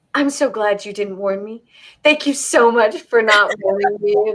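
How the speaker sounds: ordinary talk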